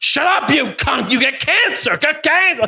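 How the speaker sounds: high, furious, abusive shrieking scream. Retelling a fight in a shop, imitating own past screaming. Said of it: "I started screaming".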